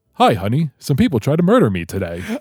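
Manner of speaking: put-on casual nonchalance, very breezy, swooping tune. Acting out a comic book panel: imitating a nonchalant character. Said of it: "very nonchalant the way the artist wrote him".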